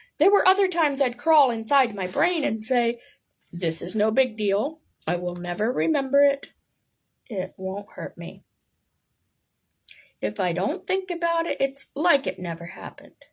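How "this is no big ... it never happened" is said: usual speaking voice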